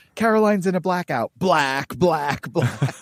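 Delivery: cartoon character voice crying out. Retelling a sitcom scene where she wakes at deadline: imitating Caroline yelling. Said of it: "and she just yells".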